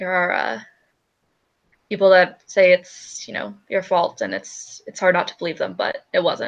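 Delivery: voice dropped right down low. She slides over the drink she was making and speaks in a low tone of voice. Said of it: "in a very like low tone of voice".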